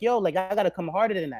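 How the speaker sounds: ordinary talk, nothing marked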